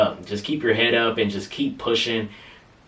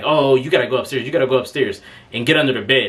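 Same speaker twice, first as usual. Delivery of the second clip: frantic, panicked, urgent, hurried voice; 2 semitones higher, 4 dB louder than usual. Recounting a story, quoting the girl, retelling a panicked girl. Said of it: "the girl starts panicking".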